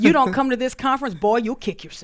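loud country car-salesman sales patter. Rephrasing another speaker's conference tagline, in a country car salesman voice. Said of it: "It sounds like the country car salesman's tagline".

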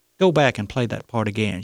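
ordinary delivery

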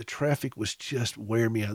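ordinary delivery

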